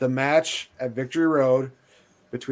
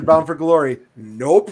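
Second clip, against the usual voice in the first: ordinary talk, nothing marked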